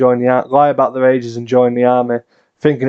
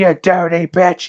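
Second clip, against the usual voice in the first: put-on angry big man's voice, pitched higher; 6 semitones higher than usual. Retelling a doll that comes to life throwing obscenities at her: imitating a big angry man's voice. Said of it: "doll with a big angry man's voice".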